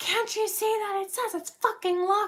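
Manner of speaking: mock screeching furious outburst, shrill and very high. Retelling how a woman came out at two girls, imitating someone yelling. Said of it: "she just comes out like yelling at us".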